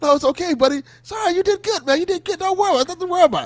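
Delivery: very high-pitched, terrified, soothing tone. Retelling how a man on live TV reassured someone after a match, imitating terrified reassurance. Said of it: "so he was like so terrified".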